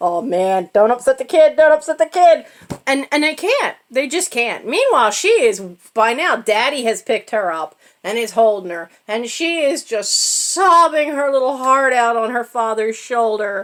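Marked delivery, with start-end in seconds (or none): 0.0-2.5 mocking words bubbling through chuckles while talking. Retelling how adults tried not to laugh near a crying child: imitating laughing while talking. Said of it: "laughing and going".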